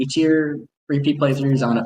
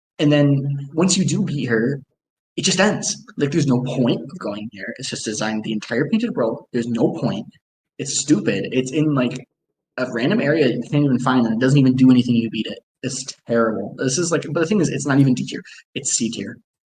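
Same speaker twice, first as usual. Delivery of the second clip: ordinary talk, nothing marked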